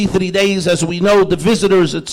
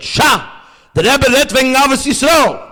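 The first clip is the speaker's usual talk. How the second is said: loud, barked-out shout; 6 semitones higher than usual. Retelling an upset man in a crowd turning on the one behind: imitating a loud shout. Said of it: "in a loud voice he said".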